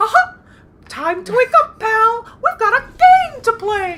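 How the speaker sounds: squeaked out high and loud. Talking about a repeating game toy, doing the one impression they can: Mickey Mouse impression. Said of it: "the only way that I can do an impression of Mickey".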